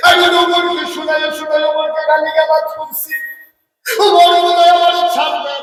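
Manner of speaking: high, loud panicked cry.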